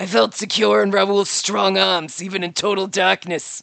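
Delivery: worn smoker's voice. Reading a game line aloud with a voice broken from a week of work, worn smoker's voice. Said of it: "Sound like I've been smoking for centuries".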